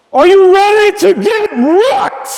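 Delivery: very high, loud, drawn-out hype fight announcer call. Asked for a robot fighter intro, performing it: robot fight announcer call. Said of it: "do you wanna give us your best".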